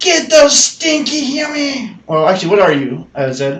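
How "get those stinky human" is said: very high, shrill goblin creature yell. Game master voicing an attacking goblin shouting at the players, yelling goblin voice. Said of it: "As in Goblin".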